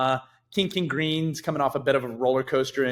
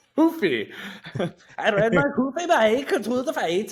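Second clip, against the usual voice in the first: fake Brazilian accent, much higher; 9 semitones higher than usual. Joking about how a fighter's name is pronounced, bad fake brazilian accent. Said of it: "Not Brazilian accent either".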